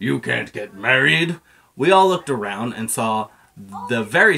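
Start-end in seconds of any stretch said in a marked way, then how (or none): 0.0-1.4 very scary put-on bug voice. Reading a story, voicing the stink bug interrupting the friends in a scary voice. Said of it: "said a scary voice".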